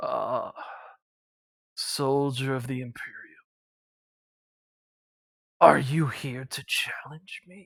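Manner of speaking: deep, towering greater demon voice. Game master voicing a large figure with swords drawn, in that figure's voice. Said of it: "he just goes".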